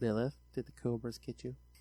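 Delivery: eerie, spooky, hushed creepy voice. Calling out to lilith, who may have been lost, in a creepy voice. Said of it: "that was a creepy voice".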